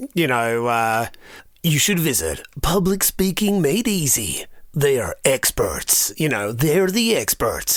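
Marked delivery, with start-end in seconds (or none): 1.6-7.8 epic movie trailer narrator voice. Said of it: "a movie trailer voice".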